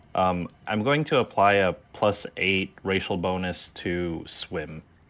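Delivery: ordinary talk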